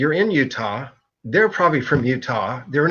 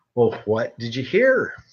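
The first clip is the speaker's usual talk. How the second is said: low, mock curious, probing, inquisitive tone; 4 semitones lower than usual. Retelling what one of the ladies asked the speaker, in a mock-inquisitive voice. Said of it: "in an inquisitive voice".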